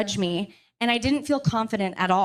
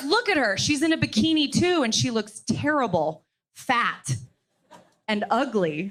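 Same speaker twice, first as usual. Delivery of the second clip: usual speaking voice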